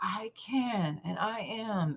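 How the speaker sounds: hushed, very slow, desperate, life-or-death intensity. Told to say it like their life depends on it, the speaker retells their answer: desperate declaration. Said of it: "say it like your entire life depends on it".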